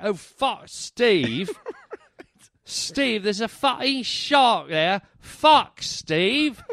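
put-on British accent throughout, high and slow. Showing how the shark warning to Steve would sound, put-on British voice. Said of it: "in a British voice".

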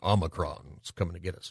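mock menacing voice. Joking about how the new variant's name must be said: mock menacing voice. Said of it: "you have to say it menacing in this way".

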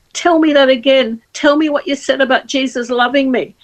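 desperate call. Retelling a woman grabbing the speaker's T-shirt: imitating a desperate plea. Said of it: "And just desperate".

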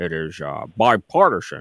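slow, deliberate, drawn-out senator-style delivery. Doing an impression for the other speaker, Mitch McConnell impersonation. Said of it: "I do a pretty good Mitch McConnell impersonation".

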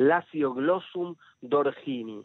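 slow, careful, deliberate reading aloud.

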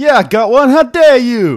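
high, loud, bad Brooklyn accent. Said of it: "You try Brooklyn accent".

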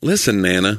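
ordinary talk, nothing marked

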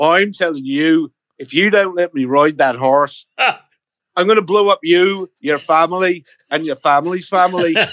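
put-on Northern Irish accent. Showing how the line should have been played, in a Northern Irish accent. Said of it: "You should have played it Northern Irish".

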